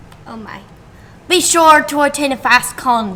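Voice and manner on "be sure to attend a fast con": put-on pirate accent, announcer-style read. Reading an ad aloud as suggested: pirate accent. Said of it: "do the ad in a pirate's accent".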